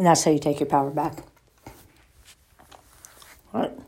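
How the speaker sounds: talking while chewing, mouth full. Speaker talks to the audience while eating, talking with mouth full. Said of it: "Sorry, I'm eating".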